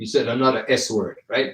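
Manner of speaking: ordinary talk, nothing marked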